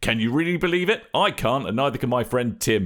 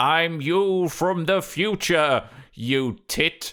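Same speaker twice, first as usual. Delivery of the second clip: put-on older sarcastic character voice, higher pitch; 3 semitones higher than usual. A future [name] answering his younger self, older [name]'s sarcastic voice. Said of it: "more sarcastic voice".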